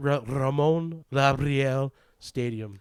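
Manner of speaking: Spanish accent with rolled R's. Asked to say a stadium name once more for the listeners, in a Spanish accent. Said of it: "for one more time for the".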